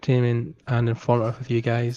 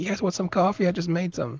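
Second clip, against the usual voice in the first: put-on Long Island accent; 7 semitones higher, 3 dB quieter than usual. Describing a guy from Long Island walking into stores, doing a Long Island accent impression. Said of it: "an actual guy from Long Island".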